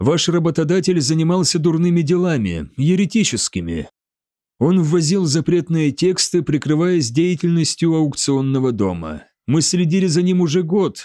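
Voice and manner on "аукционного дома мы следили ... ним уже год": plain reading voice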